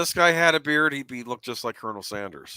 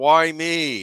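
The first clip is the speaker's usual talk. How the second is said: put-on yell, higher pitch; 3 semitones higher, 6 dB louder than usual. Describing a character's reaction in a scene, imitating a yell. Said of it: "He yells out".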